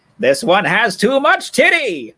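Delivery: very high villain voice, pitch swinging wildly. Doing a voice that the listener rates as a decent Skeletor: Skeletor impression. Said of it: "That's not a bad Skeletor".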